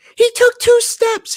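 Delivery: very high, shrill, loud scream. Retelling the mother-in-law's April Fools prank: imitating someone screaming. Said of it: "she just screams".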